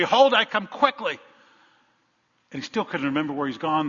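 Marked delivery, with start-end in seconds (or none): 0.0-1.2 loud, pitched-up preacher's scream. Retelling a story of a preacher who forgot his sermon: imitating someone screaming. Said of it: "he screamed out".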